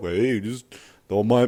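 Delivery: put-on heavyset, chubby fat-guy voice. Telling a story about a four-hundred-pound guy in a bike shop, in a put-on fat guy voice. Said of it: "I don't know why I'm doing a fat voice".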